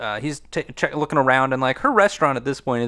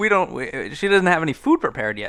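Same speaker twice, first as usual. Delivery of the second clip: ordinary delivery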